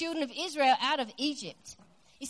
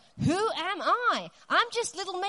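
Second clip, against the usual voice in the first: slow, drawn-out, dragged-along whiny tone; 4 semitones higher than usual. Acting out Moses answering God: imitating Moses whining. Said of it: "Will you just quit whining".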